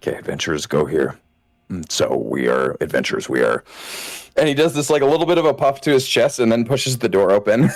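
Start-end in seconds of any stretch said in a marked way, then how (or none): 0.0-3.6 hushed, murmured half-whisper under the breath. Voicing a character at the door of the Fabled: half-whispering to himself. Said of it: "just do, like, a whole, like, whisper to himself".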